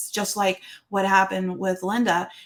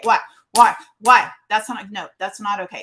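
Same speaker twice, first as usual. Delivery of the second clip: acted stern scolding tone, louder; 6 dB louder than usual. Describing how they sometimes come at someone, the speaker acts out their own stern voice. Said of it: "sometimes I'm just got a really stern voice".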